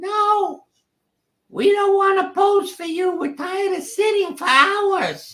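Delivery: imitated high-pitched voice. Speaker retells unhappy pets and kids answering from the house: imitating a high-pitched voice. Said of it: "I heard this high pitched voice".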